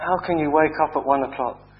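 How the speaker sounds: ordinary delivery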